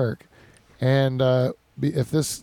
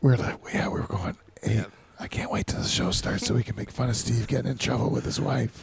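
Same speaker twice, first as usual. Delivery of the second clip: breathy, hushed whispered aside; 3 semitones lower, 6 dB quieter than usual. Retelling talk about a colleague in trouble with his wife: imitating a whisper. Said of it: "so I could whisper about it".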